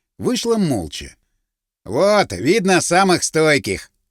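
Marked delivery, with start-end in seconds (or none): 1.9-3.9 short snort, then smirking words. Narrator reads the cropped-haired man's remark after the saleswoman leaves, with a snort. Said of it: "хмыкнул".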